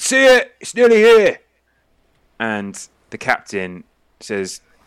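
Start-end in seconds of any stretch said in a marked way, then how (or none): 0.0-1.4 very loud, very high shout. Voicing a crew member at the rear of a ship: shouting across the ship. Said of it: "just shouts across going".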